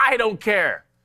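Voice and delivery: curt, abrupt, very high-pitched dismissive tone. Retelling how a daughter brushes things off: imitating daughter's abrupt reply. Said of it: "she'll say it very abruptly".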